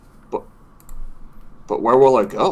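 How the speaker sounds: sorrowful, plaintive, sad, forlorn tone. Voicing an old Luma who looks sadly at the shut door: sad. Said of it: "he kinda just looks at the door sadly".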